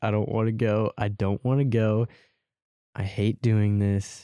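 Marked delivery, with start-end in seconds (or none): none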